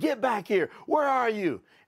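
high screaming call across a distance. Retelling dad at the edge of the woods: imitating dad screaming. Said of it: "screaming at me".

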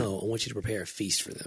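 normal talking voice

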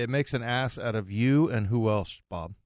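plain

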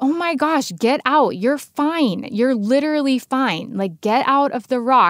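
put-on high, impatient, pushing voice. Retelling calling down from a rock to a daughter: retelling her own yelling. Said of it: "I'm, like, yelling down at her".

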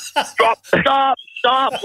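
high-pitched shouting, "stop" repeated three times.

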